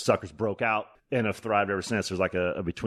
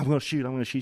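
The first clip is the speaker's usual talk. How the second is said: put-on wheezing excitement, breathless and eager, pitched higher; 5 semitones higher than usual. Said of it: "I'm wheezing still".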